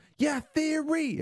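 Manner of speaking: very high-pitched screamed cry. Retelling how an audience member answered at a panel: imitating someone screaming. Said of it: "she screams out".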